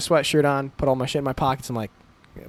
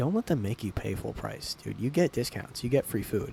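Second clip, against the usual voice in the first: very soft whisper, close to the ear; 3 semitones lower, 10 dB quieter than usual. Retelling a coworker's words spoken into his ear: imitating someone whispering. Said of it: "comes up and whispers in my ear".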